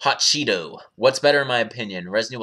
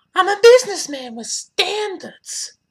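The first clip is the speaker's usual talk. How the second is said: very high, loud, slow, deliberate delivery; 5 dB louder than usual. Answering a chat request with the best imitation of Irving's voice. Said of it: "in my best imitation of Irving's voice".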